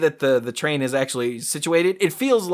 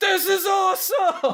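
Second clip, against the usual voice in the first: acted scream, much higher. Retelling a coaster ride, quoting her on the first big drop, imitating her scream. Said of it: "she screams".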